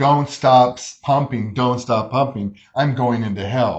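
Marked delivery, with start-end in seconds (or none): none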